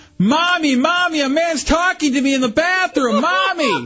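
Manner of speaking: put-on high, panicked yell like a scared little kid.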